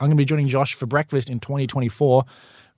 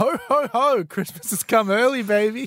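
slow, pitched-up festive voice, each ho stretched out; 8 semitones higher than usual. Co-host on a breakfast show mentions it: Santa impersonation. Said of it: "your Santa impersonation".

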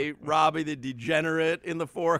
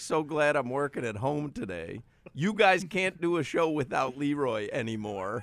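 usual speaking voice

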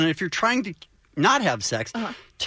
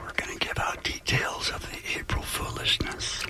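soft, hushed, secretive whisper. A radio host speaking on air to co-hosts, whispering. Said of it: "Why are you whispering?".

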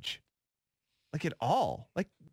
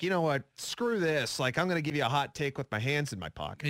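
ordinary delivery

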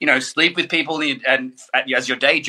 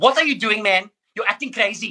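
put-on South African accent, pitched up; 8 semitones higher than usual. Imitating the speaker's sister-in-law, in a South African accent. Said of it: "My sister-in-law's South".

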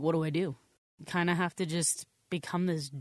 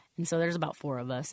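usual speaking voice

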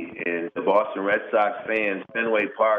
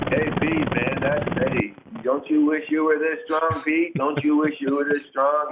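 put-on, pitched-up, loud yell; 7 semitones higher than usual. Retelling a home run trot, calling to Pete Rose: imitating own past yelling. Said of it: "I'm yelling at Pete Rose".

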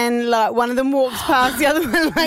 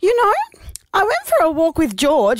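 higher voice with swooping pitch; 5 semitones higher than usual. Retelling a phone call from mum about a dog walk, imitating mum's voice. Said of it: "I have to put on my mum's voice".

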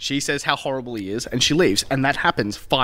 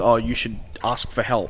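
normal talking voice

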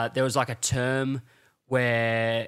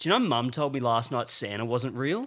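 usual speaking voice

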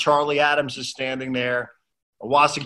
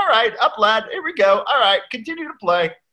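put-on English accent, pitched a little high, referee-like; 7 semitones higher than usual. Recounting moments from matches, the speaker imitates Charlie Adams's English accent. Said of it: "just with that English accent".

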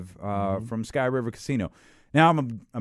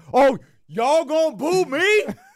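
slow, drawn-out voice, raised in pitch; 4 dB louder than usual. Retelling how a referee reacted to being booed: Denzel in Training Day voice. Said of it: "he turned into Denzel in Training Day".

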